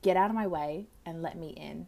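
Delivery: put-on bawling, demanding tone. Retelling running to the paramedic blocking mum's door, retelling bawling, demanding. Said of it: "I'm bawling my eyes out".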